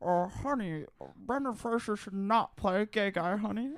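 slow, high, drawn-out put-on character voice. Acting out a line that another speaker says sounds like Peter Griffin. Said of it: "that was really Peter Griffin".

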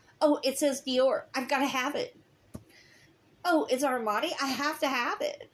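scornful, mocking put-on voice. Mocking someone who only buys clothes: mocking imitation of a clothes shopper. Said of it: "All she can seem to do is buy clothes".

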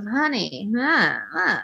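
put-on old-Hollywood drawl. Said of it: "Mae West character".

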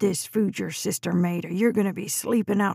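ordinary delivery

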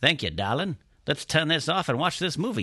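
put-on old-timey movie voice. Before watching a movie together, doing the old-timey voice. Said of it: "you can do the old timey voice".

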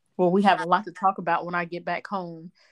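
ordinary talk

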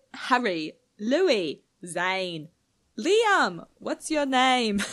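slow, clumsy, bad British accent. Speaker retelling meeting the band members, back in character, bad British accent. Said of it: "Back in British character".

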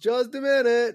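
hollered call. Retelling a cartoon scene as the doorbell rings: imitating Homer yelling. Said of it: "he yells".

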